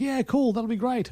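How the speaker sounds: put-on English accent. Retelling a film plot, voicing the beekeeper accepting a dinner invitation in English accent. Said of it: "In his English accent".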